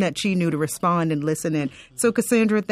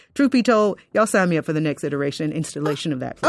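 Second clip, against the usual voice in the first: plain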